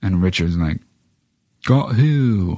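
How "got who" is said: mock, put-on English accent. Recapping a movie's ending and quoting Richard's reply, Richard in put-on English accent. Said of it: "I gave him an English accent".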